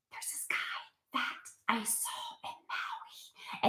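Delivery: very soft, slow, drawn-out whisper. Retelling a character telling the manager about a guy: imitating a whisper. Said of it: "she's whispering".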